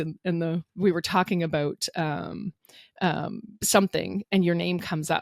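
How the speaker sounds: ordinary talk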